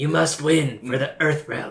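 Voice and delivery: put-on weird gravelly voice. Joining others mocking a movie actor: imitating Raiden's weird grovelly voice. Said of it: "That's really good".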